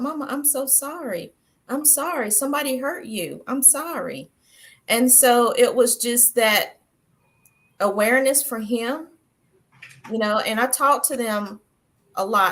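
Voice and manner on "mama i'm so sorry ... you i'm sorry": crying, sobbing, tearful voice. Retelling a son's apology after he read the book: imitating a son crying. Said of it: "he just bust out crying".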